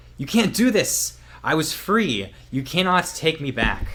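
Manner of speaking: shrill, loud scream at full volume. Voicing a trapped character as the book shuts on her: screaming in character. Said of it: "she's screaming out".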